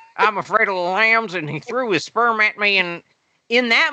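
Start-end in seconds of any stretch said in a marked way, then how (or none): 0.2-2.8 put-on, wonky, uneven Southern accent. Quoting Clarice Starling's lines to mock the accent, wonky Southern accent Clarice Starling. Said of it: "a kind of wonky Southern accent".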